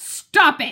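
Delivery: sharp, cutting tone. Reading a story aloud, the girl scolds her dog: sharp voice. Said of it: "she says in a sharp voice".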